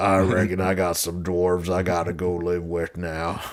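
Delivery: put-on drawling movie character voice. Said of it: "Sling Blade voice into it".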